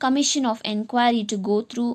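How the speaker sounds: ordinary delivery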